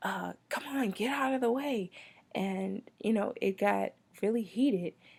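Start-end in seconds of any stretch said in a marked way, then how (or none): 0.0-1.9 mock angry yelling, much higher. Retelling a heated run-in at the supermarket, quoting the second guy: retelling an angry yell. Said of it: "he's like yelling".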